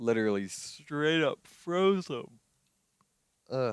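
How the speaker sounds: talking through a yawn. Speaker who got up early today, yawning while talking. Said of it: "Sorry I'm yawning".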